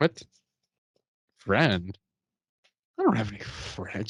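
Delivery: put-on offended, affronted tone. Retelling a character's reply to a waiter, acting offended. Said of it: "she gets all offended".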